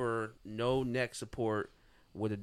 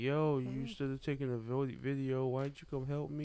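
put-on crying; 3 semitones higher than usual. Retelling what a woman said on a livestream after the fight, imitating her crying on live. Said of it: "she was on live crying like".

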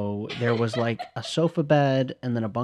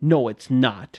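loud, strong, put-on Boston accent; 5 dB louder than usual. Recalling how someone from the midwest used to talk, imitating a strong boston accent. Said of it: "he spoke like exactly how we just spoke".

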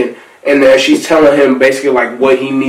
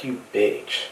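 breathy, barely audible, very quiet whisper; 3 semitones lower, 16 dB quieter than usual. Retelling a movie scene where he whispers to her: imitating a whisper. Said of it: "he whispers".

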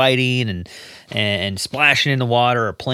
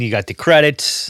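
ordinary delivery

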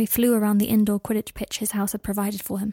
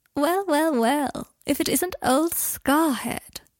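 plummy, drawn-out upper-class drawl, pitched high; 6 semitones higher than usual. Reading a story aloud, voice a man calling out from behind in Blaise's posh drawling voice. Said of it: "said a posh, drawling voice".

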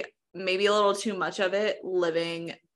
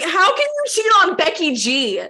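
very high, shrill, swooping yell; 10 semitones higher, 8 dB louder than usual. Reacting to talk of a man who cheated: yelling. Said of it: "I just yelled in the microphone".

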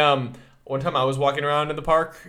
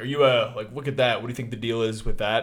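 ordinary talk, nothing marked

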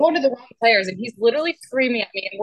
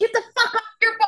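mock, shrill, very high yelling; 11 semitones higher than usual. Retelling their dad yelling at someone during a Packer game: retelling dad's yell. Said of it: "my dad's like yelling at him".

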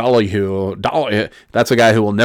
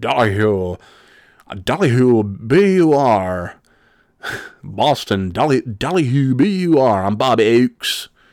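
very slow announcer voice, "w" stretched out; 3 semitones higher than usual. Imitating a radio personality's odd way of saying W: imitating Bob Oakes saying W. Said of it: "he says W, W in a way that".

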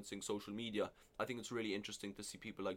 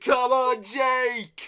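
loud, pitched-up scream, name long and drawn out; 20 dB louder than usual. Retelling how the bar's security guard cheered: imitating someone screaming. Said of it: "was just screaming".

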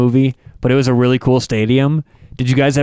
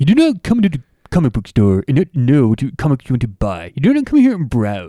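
swooping cartoon comic-shop clerk character voice. Chatting with the others about The Simpsons, doing a Comic Book Guy voice. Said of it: "Comic book guy, The Simpsons".

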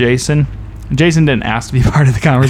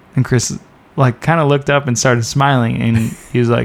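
plain

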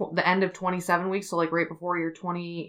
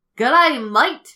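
put-on very loud, high-pitched Australian accent; 8 semitones higher, 10 dB louder than usual. A podcast host introducing a story set in Sydney, in an Australian accent. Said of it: "you got my Australian accent there".

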